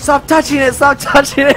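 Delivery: acted-out scream. Telling how he reacted when the speaker cocked a real gun, retelling someone's screaming. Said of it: "And he started screaming like".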